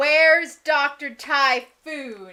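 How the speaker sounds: very loud, big, booming, demanding shout. Yelling a question at a creature during a spell: yelling in character. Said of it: "I'm gonna yell".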